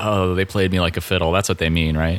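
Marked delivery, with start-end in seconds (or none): none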